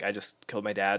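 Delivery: soft, dead calm, matter-of-fact delivery. Retelling a seventeen-year-old kid's call to a dispatcher: imitating a very calm voice. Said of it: "very calm about it".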